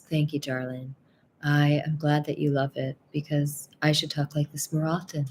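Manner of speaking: fake, put-on, sexy, sultry tone. Thanking a viewer who praised the voice: put-on sexy sultry voice. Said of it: "likes my very sexy, sultry voice".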